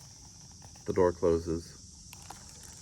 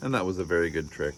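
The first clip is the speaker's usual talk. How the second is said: usual speaking voice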